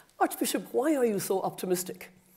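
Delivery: mock, faintly sour tone. Retelling a moderator's question to the Archbishop on a panel: imitating a tart voice. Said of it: "in a tart voice".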